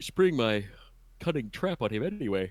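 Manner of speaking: soft, breathy talk through a yawn. Chatting with the group as things wind down, yawning while talking. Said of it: "Sorry, I'm yawning".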